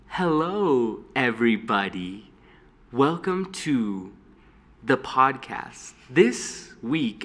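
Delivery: very slow, drawn-out, stretched-out words. Imitate for your listeners a lady welcoming everybody to her podcast, talking really slowly. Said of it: "talks like really slowly".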